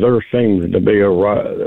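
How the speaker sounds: ordinary delivery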